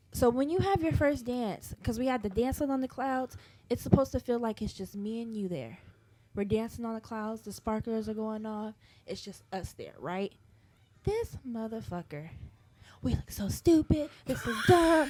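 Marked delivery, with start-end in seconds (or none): 13.0-15.1 complaining tone in a stage whisper. Retelling what the partner said during their first dance: imitating someone whispering. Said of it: "He's whispering it to me".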